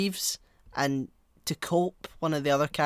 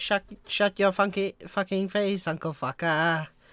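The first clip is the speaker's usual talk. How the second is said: slow, drawn-out cartoon Canadian accent; 3 semitones higher than usual. Answering a request to talk like the Canadians from South Park: South Park Canadians voice. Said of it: "you talk like the Canadians from South Park".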